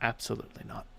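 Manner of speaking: barely audible, very quiet, dead-level whisper. Voicing Auntie answering a player face to face: whisper. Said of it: "just whispers".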